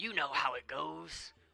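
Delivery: hollering goblin voice. Voicing an elderly goblin farmer announcing a harvest contest: hollering goblin farmer. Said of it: "one hollers out in a ready voice".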